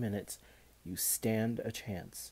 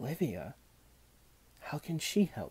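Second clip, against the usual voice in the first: discreet, guarded, secretive, confidential tone; 3 semitones higher than usual. Answering a murmur in his ear while being watched from across, said softly. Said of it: "Charlie said softly".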